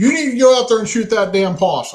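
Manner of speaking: play-acted, very high, urgent, high-pitched yelling. Retelling how Susan came running in about a possum: imitating someone yelling. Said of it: "And she starts yelling".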